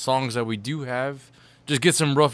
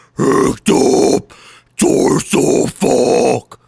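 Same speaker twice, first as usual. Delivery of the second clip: low metallic scream, louder; 10 dB louder than usual. Giving a lyric from the new track on request: low metal scream. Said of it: "That was a somewhat of a low".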